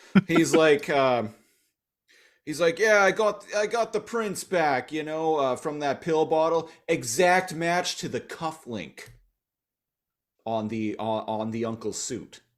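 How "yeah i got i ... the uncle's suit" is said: put-on higher New York cop accent. Retelling a cop character's line: New York detective delivery. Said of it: "he's talking like a New York detective in his delivery".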